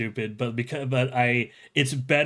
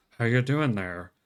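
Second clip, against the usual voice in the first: chill gorilla voice through clenched teeth. Speaker imitates a favorite chill gorilla character, talking through clenched teeth. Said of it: "move his lips without moving his teeth".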